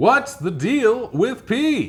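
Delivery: drawn-out, high, swooping pitch. Asking the final question: Seinfeld impression. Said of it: "I'm doing like a stupid imitation of Seinfeld".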